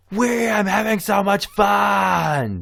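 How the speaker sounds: very high, loud shrill scream with "fun" drawn out. Speaker retells a girl who had looked bored suddenly joining in: imitating her screaming. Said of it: "she started screaming".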